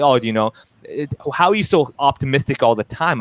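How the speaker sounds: ordinary talk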